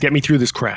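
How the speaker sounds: intimidating, menacing tone. Voicing a character who intimidates a tall man in a crowd: intimidating. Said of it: "I wanna do an intimidation check".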